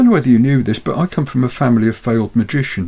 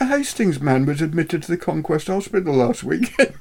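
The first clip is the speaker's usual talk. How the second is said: soft voice cracking up into laughter mid-line; 4 semitones higher, 5 dB quieter than usual. Moving on after a joke, the speaker starts the next item, breaking into laughter. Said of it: "Charlie seems to have corpsed there".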